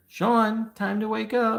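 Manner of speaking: put-on very high, drawn-out little-boy screaming voice. Retelling a voice heard right in the ear: imitating a little boy screaming. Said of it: "this little boy scream in my ear".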